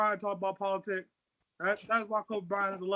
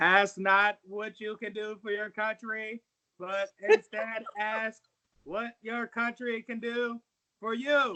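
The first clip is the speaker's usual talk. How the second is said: clumsy put-on Massachusetts accent with a speechmaking delivery. Doing a JFK impression of a famous speech line: JFK impression. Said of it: "I think I do a great J F K".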